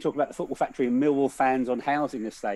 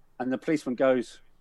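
ordinary delivery

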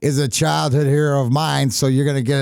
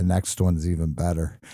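soft, hushed, private half-whisper; 9 semitones lower, 6 dB quieter than usual. Retelling what Joey half-whispered after a playoff win: imitating Joey's half-whisper. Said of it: "he whispers in my ear".

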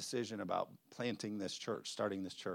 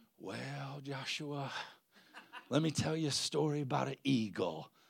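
put-on Southern accent with raised pitch; 5 semitones higher than usual. Quoting Pastor Tommy's reply after the speaker called him, imitating Pastor Tommy's Southern accent. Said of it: "he's Southern".

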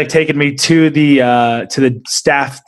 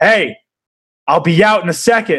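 mock menacing, aggressive, forceful delivery; 4 semitones higher than usual. Retelling a reply from behind a bathroom door, imitating an aggressive voice. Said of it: "a more of aggressive voice came back".

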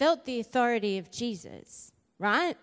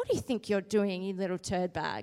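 low, hushed, stern scolding voice; 4 semitones lower, 5 dB quieter than usual. Watching kids flick their siblings, speaker is about to scold them in her mum voice. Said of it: "get my mum voice on".

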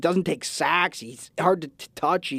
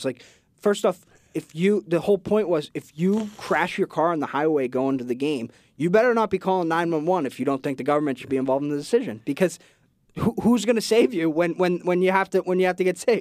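ordinary delivery

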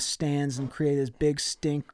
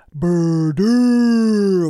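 very loud, booming, drawn-out yell, pitched up; 5 semitones higher, 12 dB louder than usual. Telling a story, acting out how he yells inside the casino, booming yell. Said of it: "he yells inside in a booming voice".

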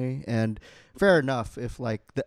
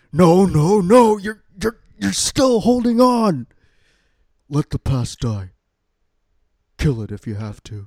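very loud, larger-than-life film-actor delivery, wide pitch swings; 7 semitones higher, 11 dB louder than usual. Quoting the movie villain's line: Adam Driver and Nicolas Cage combined. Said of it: "trying to do Adam Driver and Nicolas Cage combined".

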